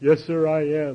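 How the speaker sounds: weeping, slow, drawn-out voice. Retelling a tearful admission to a future sponsor: imitating own past crying. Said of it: "I'm crying and snotting all over myself".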